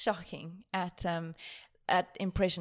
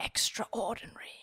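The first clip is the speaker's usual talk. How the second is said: put-on nature-documentary narrator voice, pitched higher; 3 semitones higher, 5 dB quieter than usual. Proposing a drinking game, saying his favourite word in a David Attenborough impression. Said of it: "That was a brilliant impersonation".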